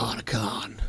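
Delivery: put-on croaky, gravelly voice. Trying to sound like Snake by putting on a voice. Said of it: "I could almost sound like Snake".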